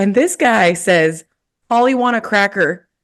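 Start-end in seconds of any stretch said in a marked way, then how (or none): 1.7-2.8 put-on American accent, much higher. Retelling what a guy finally said when asked for an american accent, american accent. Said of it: "can you please say something in an American accent?".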